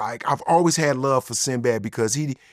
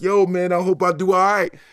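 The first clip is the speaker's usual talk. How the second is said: mock jittery, nervous tone in a higher voice; 6 semitones higher, 4 dB louder than usual. Retelling waiting backstage before going on stage: imitating his own nervous self. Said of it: "This is when you nervous".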